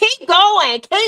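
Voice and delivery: very loud, high-pitched scream. Telling Tamika about yelling at a man on TV, retelling screaming at the TV. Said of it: "I was screaming at the T V".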